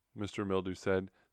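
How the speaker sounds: plain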